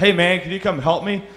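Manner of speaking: high, mild, called-out voice. Retelling a walk when a guy called out for help: imitating a guy yelling. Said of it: "some guy yelled out".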